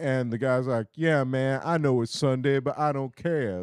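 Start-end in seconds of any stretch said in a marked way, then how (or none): 0.9-3.6 put-on jive talk voice. Retelling a customer's phone call to Billy, imitating jive talk.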